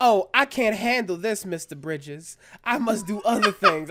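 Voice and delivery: put-on drawling Southern accent. Quoting a cartoon line by Ed, a rich boy from Atlanta: imitating Ed's Southern drawl. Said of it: "whatever the line does like this".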